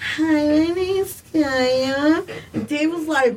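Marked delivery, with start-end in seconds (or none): 0.1-2.2 put-on very slow, drawn-out little baby voice. Retelling how a friend introduced herself on the mic: imitating a baby voice. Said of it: "like this baby voice".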